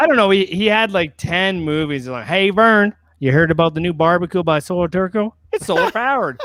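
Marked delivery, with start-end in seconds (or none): 2.2-6.4 put-on goofy character voice, higher and louder. Answering what Ernest would sound like, redoing a school video ad: Ernest voice. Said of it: "I did it as Ernest, Jim Varney".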